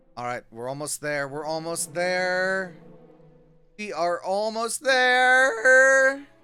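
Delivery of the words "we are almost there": excited cracking voice, higher and louder. Playing a game and nearly at the goal, excited, voice cracking. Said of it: "Voice crack".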